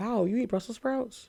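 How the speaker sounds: play-acted high, incredulous, judgmental disbelief. Retelling a physician's remark about ordering Brussels sprouts: imitating a judgmental physician. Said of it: "sitting in my face like".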